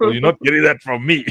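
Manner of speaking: quick, snappy, high-pitched delivery. Retelling what Rob said on the phone: imitating Rob. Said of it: "That's a good impression".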